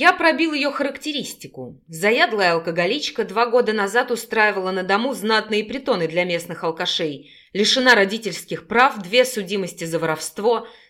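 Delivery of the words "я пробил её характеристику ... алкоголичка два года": ordinary delivery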